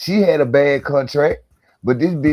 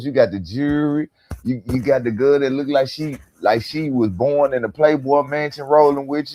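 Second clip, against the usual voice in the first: plain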